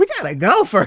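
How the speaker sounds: loud, urgent, mock heroine character voice.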